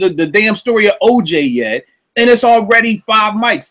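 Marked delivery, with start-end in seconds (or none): none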